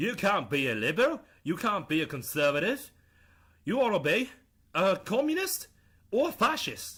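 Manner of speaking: terrible, clumsy put-on British accent. Paraphrasing deadmau5's views in his accent: deadmau5 British accent. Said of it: "let me do his accent. ... that's a terrible British accent".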